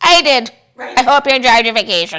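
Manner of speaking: very loud, high, put-on leprechaun ghost voice. Acting out a ghost answering someone back from vacation, in a leprechaun ghost voice. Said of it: "I just made him a leprechaun".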